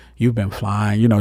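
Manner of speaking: put-on woman's voice. Retelling what a woman said to him when he woke up, imitating her voice. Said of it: "She had that voice".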